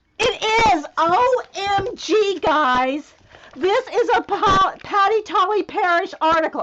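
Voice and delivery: high, very loud, thrilled, excited yelling. Recognizing an article while sorting journal supplies for viewers: excited yelling. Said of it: "sorry, I'm yelling at you".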